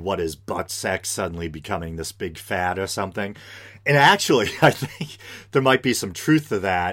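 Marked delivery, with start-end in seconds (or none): none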